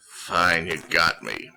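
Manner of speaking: with a sigh. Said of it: "He just sighs".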